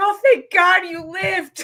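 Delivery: high, slow voice laughing with relief.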